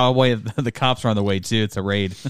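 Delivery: ordinary delivery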